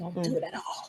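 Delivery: hushed, soft whispered aside. A gamer on a stealth mission talks to teammates, whispering.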